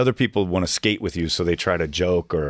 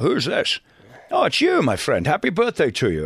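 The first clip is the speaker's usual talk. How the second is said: high-pitched put-on voice with swinging, swooping pitch; 8 semitones higher than usual. Retelling a radio prank call, playing the callee: Sean Connery voice. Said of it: "the Sean Connery I was playing".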